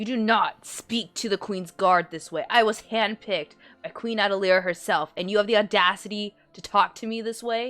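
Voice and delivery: outraged, furious tirade. Voicing a queen's guard who grabs a player's jaw, snarling: furious guard voice. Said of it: "Her eyes are tensing up".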